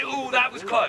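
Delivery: ordinary talk, nothing marked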